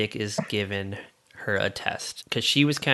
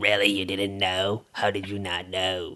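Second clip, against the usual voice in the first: put-on older smoker's voice; 3 semitones lower than usual. Speaker retelling the lunch lady's reply, late-life Lucille Ball smoker's voice. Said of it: "the later in life Lucille Ball smoker's voice".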